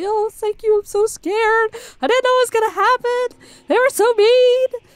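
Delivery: very high, crying, tearful voice. Voicing grateful hostages freed from captors: crying and thanking. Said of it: "people crying and thanking you profusely".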